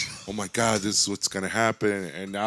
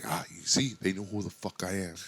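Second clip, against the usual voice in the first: put-on muttering under breath, quieter; 6 dB quieter than usual. Retelling own reaction when recognized at a place: imitating muttering under breath. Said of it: "under my breath".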